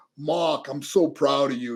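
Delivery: put-on slow Brooklyn accent with R's dropped. Quoting his dad from brooklyn talking to him, in a brooklyn accent. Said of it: "my dad from Brooklyn, New York. So he talked like this".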